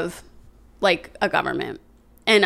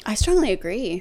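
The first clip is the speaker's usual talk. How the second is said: joking, put-on sarcastic tone; 2 semitones higher than usual. Answering a quiz statement as a joke: put-on sarcastic agreement. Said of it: "Obviously, I'm being sarcastic".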